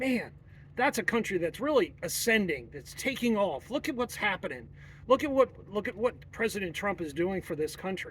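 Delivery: ordinary talk, nothing marked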